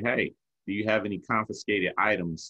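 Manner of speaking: plain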